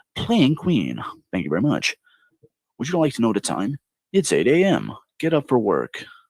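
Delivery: sing-song, swooping-pitch voice-assistant announcement style. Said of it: "I could be a voice for the Amazon guy".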